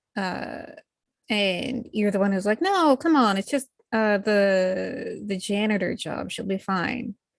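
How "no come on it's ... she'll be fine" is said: plain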